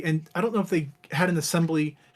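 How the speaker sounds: ordinary talk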